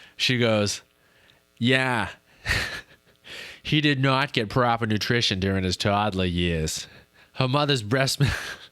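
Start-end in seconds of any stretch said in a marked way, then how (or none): 1.6-8.3 put-on Boston accent. Speaker quotes a line by actress Rachel Dratch, in her Boston accent. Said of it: "Incredible Boston accent".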